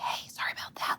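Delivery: very quiet, hushed, under-the-breath whisper. Showing the kind of quiet apology not allowed: mock whisper.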